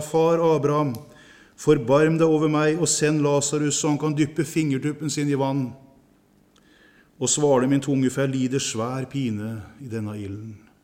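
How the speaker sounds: usual speaking voice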